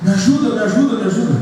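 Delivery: high-pitched crying out.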